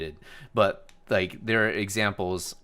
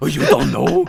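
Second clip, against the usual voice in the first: put-on cartoon dog voice, higher and louder; 7 semitones higher, 10 dB louder than usual. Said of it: "like fucking Scooby-Doo".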